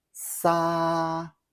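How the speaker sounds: sa held steady, even, on high level first tone. Teaching tones, first tone meaning release: high level tone on sa. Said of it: "With the first tone, it's sa, meaning release or let go. Keep it high and steady".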